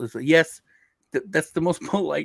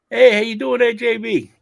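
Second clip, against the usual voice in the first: terrible put-on Boston accent, loud and pitched up; 9 semitones higher, 8 dB louder than usual. Told to go for boston, the speaker greets someone in a terrible boston accent. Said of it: "That was a terrible accent".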